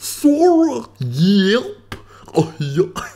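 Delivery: very high, slow, swooping cartoon bellow, yep stretched. Explaining that Goofy can't be whispered, then showing how it goes: Goofy voice. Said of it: "you have to go".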